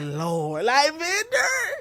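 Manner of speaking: put-on, high, swooping fed-up exasperation. Imitating mom shaking her head at a gift: imitating mom's exasperation. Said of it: "my mom shaking her head like".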